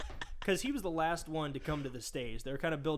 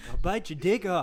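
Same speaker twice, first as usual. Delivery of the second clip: angry put-on voice, higher and louder; 3 semitones higher, 9 dB louder than usual. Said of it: "that impression is even funnier".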